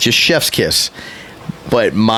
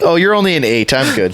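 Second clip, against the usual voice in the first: plain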